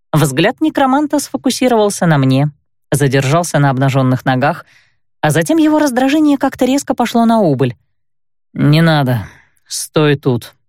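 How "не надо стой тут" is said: grumbling, much slower. The necromancer, his irritation fading, answers the narrator, grumbled. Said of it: "буркнул Каэль".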